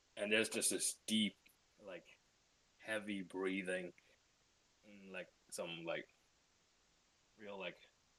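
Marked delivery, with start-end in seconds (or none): none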